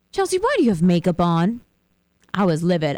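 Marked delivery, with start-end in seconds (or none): 0.1-1.6 snide, very condescending, talking down. Retelling a coworker's remark about wearing makeup: mock-condescending tone. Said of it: "in this tone and very condescending".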